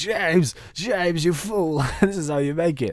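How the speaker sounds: mock screamed, berating, angry scolding tone. Imagining a viewer yelling about the crafting recipe: imitating a viewer screaming. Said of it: "I bet someone's screaming at me".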